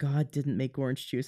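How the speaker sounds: put-on whisper. Retelling what the chiropractor leaned in and said: imitating a whisper. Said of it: "he leans into me and he whispers".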